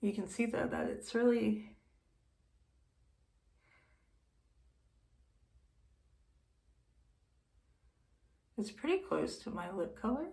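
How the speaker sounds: speaking in a whisper. Showing a lip color and naming the product: whispering. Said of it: "Why am I, like, whispering now?".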